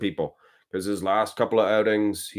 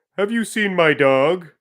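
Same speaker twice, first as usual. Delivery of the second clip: very high-pitched cartoon dad voice; 10 semitones higher, 6 dB louder than usual. Asked to do the Marge and Homer Simpson voices, doing a Homer Simpson voice. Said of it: "Homer goes".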